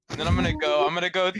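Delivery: plain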